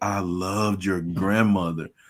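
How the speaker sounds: solemn, slow, serious, earnest delivery. Retelling what a lady told the speaker's mother: imitating a serious tone.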